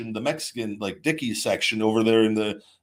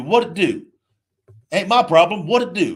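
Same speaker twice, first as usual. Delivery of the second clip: loud, pitched-up put-on Texas accent; 8 semitones higher, 7 dB louder than usual. Retelling what a roommate from Texas always said; imitating Texan roommate. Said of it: "He was from Texas, Beaumont, Texas. So he'd always be".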